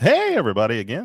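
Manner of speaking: loud, lively, eager, enthusiastic delivery. Greeting the audience a second time: enthusiastic greeting. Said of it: "say that one more time with some enthusiasm".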